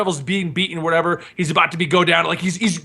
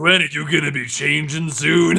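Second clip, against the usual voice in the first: put-on creepy uncle voice; 2 semitones lower than usual. Joking about a character as a creepy uncle: creepy uncle voice. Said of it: "Creepy uncle".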